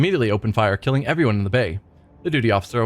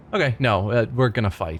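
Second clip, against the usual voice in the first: ordinary delivery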